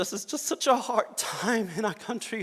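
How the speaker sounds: overcome with feeling. Speaker talking about parents taken by ICE, emotional. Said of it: "I'm sorry for being emotional".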